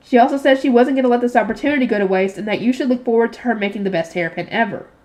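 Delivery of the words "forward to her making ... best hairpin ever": ordinary delivery, nothing marked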